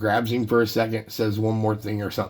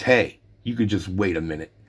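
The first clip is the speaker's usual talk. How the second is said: mock rude delivery. Speaker recounts a ballplayer signing autographs snapping at a friend, retelling Steve Garvey being rude. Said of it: "Kind of real rude like".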